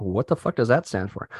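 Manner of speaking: ordinary talk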